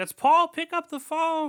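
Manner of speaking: very high-pitched, loud scream. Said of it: "And she starts screaming".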